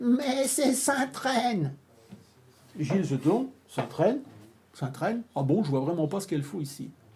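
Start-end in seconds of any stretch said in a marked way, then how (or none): 0.0-1.7 put-on wavering, quavering, high little old-lady voice. Retelling a visit, the speaker voices the little old lady heard suddenly: quavering little old voice. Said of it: "une petite vieille voix chevrotante qui fait".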